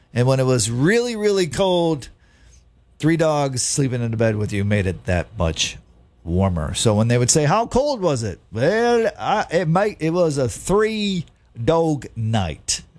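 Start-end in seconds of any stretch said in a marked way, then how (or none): 8.5-12.8 bad fake Australian accent, higher and slower. Explaining how a band got its name, speaker delivers the punchline in a bad Australian accent. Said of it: "That's an awful accent".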